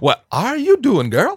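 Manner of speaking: very effeminate and camp, high and loud. Joking about a comic character, the speaker voices Wolverine in an effeminate tone. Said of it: "in a very effeminate tone".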